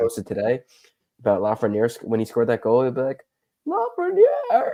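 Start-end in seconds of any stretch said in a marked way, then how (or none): 3.7-4.7 voice breaking way up, very high and cracking. Retelling an announcer's goal call that has a bad voice crack. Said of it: "such a bad voice crack".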